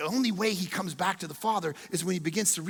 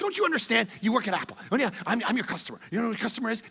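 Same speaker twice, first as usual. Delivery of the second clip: acted-out exasperated arguing, a little angry, pitched up; 5 semitones higher than usual. Retelling arguing with an apple employee over a phone, retelling getting a little angry. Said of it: "I start to get a little angry with him".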